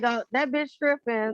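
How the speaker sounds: ordinary talk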